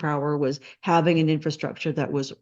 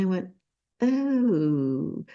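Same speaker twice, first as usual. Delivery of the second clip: normal talking voice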